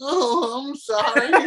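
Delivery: put-on elderly voice pitched very high. Describing old people in slasher films, impersonating old people. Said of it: "I liked your impersonation of the old people".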